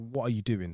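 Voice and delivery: ordinary talk, nothing marked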